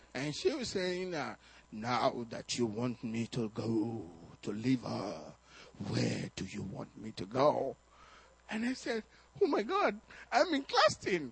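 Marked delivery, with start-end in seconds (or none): 1.7-7.8 very low, man-like voice. Recalling what a woman said to the speaker; imitating a mannish voice. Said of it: "she was talking almost like a man".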